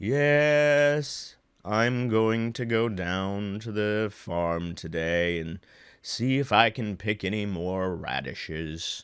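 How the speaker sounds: very slow, low voice, "yes" stretched out. Demonstrating a character who speaks very slowly: very slow character voice. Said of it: "Some characters speak very slowly".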